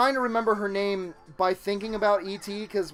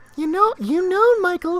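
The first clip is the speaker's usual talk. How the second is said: put-on grandmother voice, British accent, much higher; 10 semitones higher, 8 dB louder than usual. Leaning close to the microphone, the speaker does their British-accented grandmother voice. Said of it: "for some reason I'm British".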